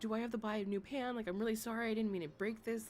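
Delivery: put-on tearful voice, said through tears. Retelling coming to him after breaking a pan: retelling own past crying. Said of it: "I was, like, crying, and I was like".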